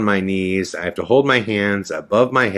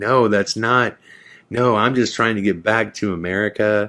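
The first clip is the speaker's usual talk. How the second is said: sobbing, crying, pleading through tears. Retelling pleading with people threatening arrest while trying to get back to America: retelling a crying plea. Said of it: "I started crying".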